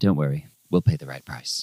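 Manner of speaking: low-key, discreet, understated delivery. Narrating a game, a character discreetly reassures the patrons, very quiet. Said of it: "he just very quietly says".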